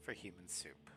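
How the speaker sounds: soft, spooky whisper.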